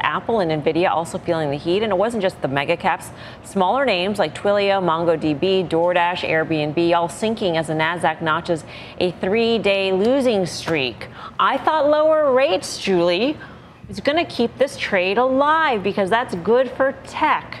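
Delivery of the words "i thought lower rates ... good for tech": dry, tongue-in-cheek, pitched-up sarcastic aside. Putting a remark to another speaker on the desk: sarcastic. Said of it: "I say sarcastically".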